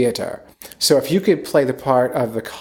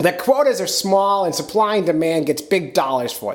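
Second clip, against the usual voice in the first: odd, pitched-up Maine fisherman voice; 6 semitones higher than usual. Doing an impression of a fishing captain's answer: imitating Captain Sean. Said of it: "some weird Gilbert Godfrey from Maine".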